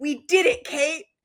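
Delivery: put-on heartfelt, earnest voice. Recapping a scene, the speaker acts out the boyfriend Jed's line: mock-earnest voice. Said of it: "in the most earnest voice".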